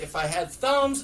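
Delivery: ordinary delivery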